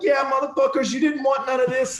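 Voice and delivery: very high, jeering, taunting war-face yell. Retelling yelling at the men as they sped off, retelling screaming at him. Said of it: "I'm just screaming at him".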